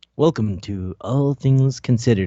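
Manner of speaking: very low, hushed, soft radio-host voice. Joking about how people imitate public radio: weird soft NPR voice. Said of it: "you just make a weird soft voice".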